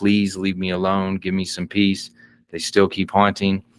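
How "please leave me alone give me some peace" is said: acted-out mock-tearful, pleading voice. Telling of a haunted man who finally begs his haunters, acting out tearful pleading. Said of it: "tears streaming, begging, pleading".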